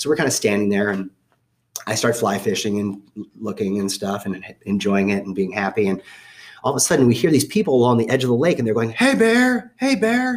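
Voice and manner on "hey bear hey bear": very slow, high, drawn-out calling yell. Retelling people at the lake edge calling to a bear: imitating people yelling. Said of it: "They're yelling like that".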